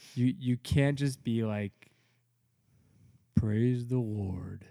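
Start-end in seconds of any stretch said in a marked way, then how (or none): 3.3-4.6 put-on flat monotone voice. Telling fellow regulative-principle believers how not to praise: monotone Chevy-commercial voice. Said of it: "in your monotone voice".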